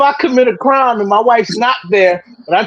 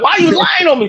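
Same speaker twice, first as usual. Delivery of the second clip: mock yelling, higher; 6 semitones higher than usual. Retelling what the wife yells in the background over the phone: imitating wife yelling. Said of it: "She yell it in the background".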